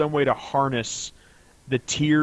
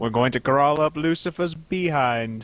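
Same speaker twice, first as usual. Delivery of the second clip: terrible, awful attempt at a cartoon mouse voice; 3 semitones higher than usual. Riffing on a Pinky and the Brain exchange, doing a terrible Brain impersonation. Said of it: "That's that's my terrible brain impersonation".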